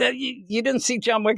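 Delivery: escalating angry rant, pitched very high. Retelling a security guard scolding kids: imitating someone getting mad. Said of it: "he starts getting all mad at them".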